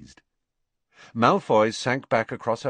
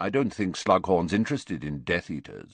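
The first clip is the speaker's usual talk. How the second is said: ordinary delivery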